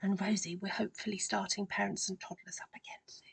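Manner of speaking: hushed, soft whisper. Speaker addressing rosie among announcements to listeners: whispering. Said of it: "I don't know why I'm whispering".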